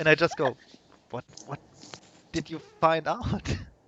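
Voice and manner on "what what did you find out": mock-scared, acted frightened, much quieter. Retelling how they asked what someone found out, acting out being scared. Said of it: "I'm visibly scared asking this".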